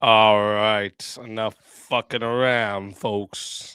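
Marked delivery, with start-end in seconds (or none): 1.2-3.7 slight Southern accent, lower and quieter. Opening a one v one debate: slight Southern accent. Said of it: "Like I sounded Southern there".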